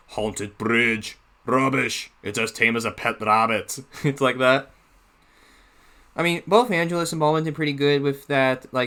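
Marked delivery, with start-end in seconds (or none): 0.2-3.8 low-pitched, scoffing character voice. Praising a reader's performance, the speaker imitates his Duncan character voice. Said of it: "I love Angelos' Duncan voice when he does that".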